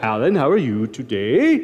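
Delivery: slow, lilting delivery, each phrase lifting at its end. Retelling how Paul used to greet Alan, imitating Paul's upward inflection. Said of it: "kind of funny the way he talked".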